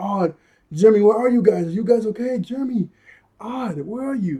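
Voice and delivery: put-on high yell. Describing a scene with smoke in the lab, imitating Yumi yelling. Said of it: "She's yelling like".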